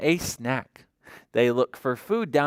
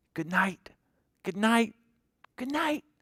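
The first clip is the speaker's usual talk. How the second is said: hushed, high little stage half-whisper; 5 semitones higher, 6 dB quieter than usual. Reading a farm story aloud, the farmer's line, half-whispering. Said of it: "The farmer whispers round the farm".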